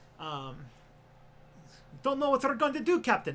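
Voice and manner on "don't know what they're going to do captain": high-pitched, loud Polish accent. Doing an impression of Chekov from Star Trek: Chekov Polish accent. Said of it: "Like Chekhov in Star Trek was doing a Polish accent".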